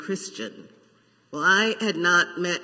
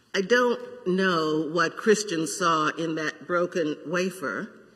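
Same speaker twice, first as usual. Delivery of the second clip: normal talking voice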